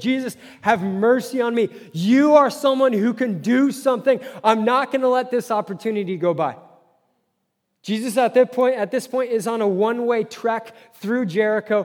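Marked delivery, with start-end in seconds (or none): 0.0-6.6 mimicked screaming. Retelling a man calling out to jesus, acting out screaming. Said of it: "No, he's screaming".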